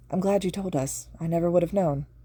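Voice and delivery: plain reading voice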